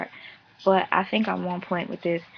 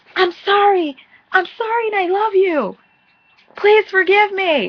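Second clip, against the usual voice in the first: shrill, very loud, high, full-throated scream; 12 semitones higher, 11 dB louder than usual. Acting out how a guy apologizes to his girl in public, mock screaming. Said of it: "he'll scream out to the world".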